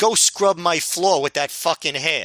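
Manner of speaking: big, heavy, thick put-on New York accent. Retelling what someone yelled out during a segment: big new york accent. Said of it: "in this like big New York accent".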